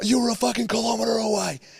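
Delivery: very high, mock screaming voice. Speaker retells a shouting match with another driver, retelling a screamed retort. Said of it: "him screaming at each other".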